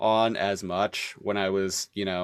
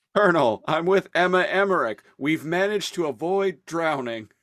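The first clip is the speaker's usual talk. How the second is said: put-on vigorous delivery, much higher pitch; 8 semitones higher, 5 dB louder than usual. Quoting a game character's line to the Colonel, the speaker imitates a vigorous delivery. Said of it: "with this like vigor in his voice".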